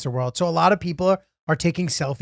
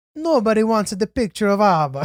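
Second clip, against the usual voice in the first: put-on Italian accent, high-pitched; 6 semitones higher, 4 dB louder than usual. Recalling a man's running bit during photos, in a Mario and Luigi Italian accent. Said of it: "in an Italian accent going".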